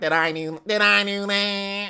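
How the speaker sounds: slow high-pitched whining. Speaker demonstrating how Steve Urkel sounds to friends: Steve Urkel impression. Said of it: "Steve Urkel's like".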